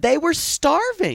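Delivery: high, slow, drawn-out exasperated tone of disbelief.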